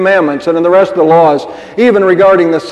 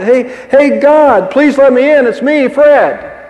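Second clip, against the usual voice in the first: put-on frantic, pleading, high, drawn-out holler; 7 semitones higher than usual. Telling a joke about a man knocking at the pearly gates: hollering. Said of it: "he hollers out".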